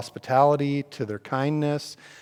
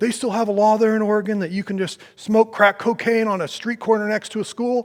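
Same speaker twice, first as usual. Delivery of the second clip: heated, high-pitched yelling; 8 semitones higher, 4 dB louder than usual. Retelling how a stranger leaning out of his truck yelled: imitating a man yelling. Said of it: "he's yelling at me".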